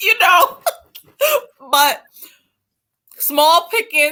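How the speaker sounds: put-on high, loud Guyanese London accent.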